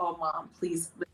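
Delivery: put-on teary, tearful begging plea. Retelling how the son spoke at lunch: imitating son pleading in tears. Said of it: "with tears".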